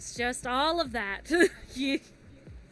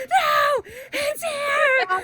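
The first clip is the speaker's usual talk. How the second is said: panicked frightened scream, higher and louder; 14 semitones higher, 9 dB louder than usual. Retelling the scary game moment, imitating a panicked scream. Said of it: "Freaking the fuck out".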